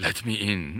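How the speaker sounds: spooky, creepy, hushed half-whisper, very close-up. Describing what Klaus says in your ear at night, doing Klaus's creepy half-whisper. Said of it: "Klaus whispers in your ear and he says".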